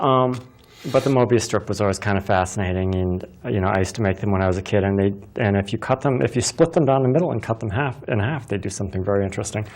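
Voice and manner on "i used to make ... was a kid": rushed, very fast talk. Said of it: "I'm talking too fast".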